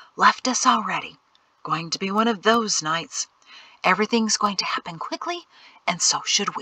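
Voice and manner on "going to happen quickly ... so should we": plain reading voice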